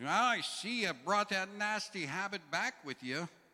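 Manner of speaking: very loud, high-pitched, shrill scolding shout. Retelling how someone shouted at a smoker from the sidewalk: imitating a loud scolding shout. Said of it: "Loud voice says".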